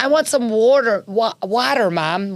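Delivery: R leaned on in water, said slowly. A parent mimics the younger daughter's accent from school, imitating daughter's pronounced r's. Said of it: "she pronounces her R's".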